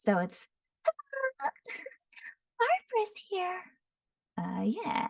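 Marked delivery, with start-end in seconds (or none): 0.0-3.6 put-on very high, light, airy, jittery, nervous young voice. A speaker demonstrates their character voices: Barbara's young, airy, nervous voice. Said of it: "super young and high pitched and airy and a little nervous".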